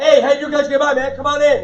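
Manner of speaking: big, loud, boomy, booming voice. Imitating a seller who greets you in a loud, booming voice. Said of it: "A little more boom in the voice".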